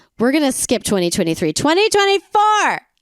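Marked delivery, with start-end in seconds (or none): 1.6-2.8 thrilled, excited shout pitched very high. Recounting a Brazilian gymnast's career successes year by year, excited yelling. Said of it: "Am I yelling? I think I'm yelling".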